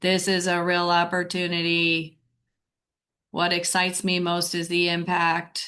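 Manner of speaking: flat monotone, every word equally stressed. Showing a speaking mistake to avoid: flat monotone delivery. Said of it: "That's flat uh, intonation".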